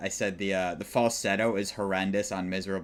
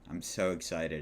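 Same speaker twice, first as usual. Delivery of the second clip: mock excitement, lower and quieter; 3 semitones lower, 6 dB quieter than usual. Introducing a review the speaker calls a duty: sarcastically excited. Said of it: "if you can tell by the tone of my voice".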